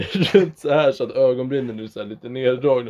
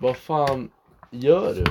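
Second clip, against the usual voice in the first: plain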